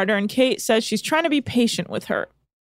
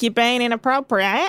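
attempted New Zealand accent. After watching Bachelorette New Zealand, telling Nick off in a New Zealand accent. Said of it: "So I'm kind of somewhat have this accent down".

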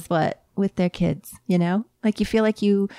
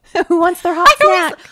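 shrill, very high, screeching call; 10 semitones higher, 7 dB louder than usual. Showing how the hot snack gets announced on set, in a screechy loud call. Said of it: "Is that screech?".

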